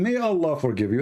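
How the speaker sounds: ordinary delivery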